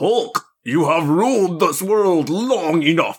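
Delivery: high, swooping cartoon villain voice, "die" drawn out. The speaker voices a huge hand speaking to the Hulk: Mojo Jojo voice. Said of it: "You went real Mojo Jojo there".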